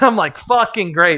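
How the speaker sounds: plain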